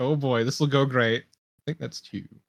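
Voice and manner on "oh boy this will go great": ordinary talk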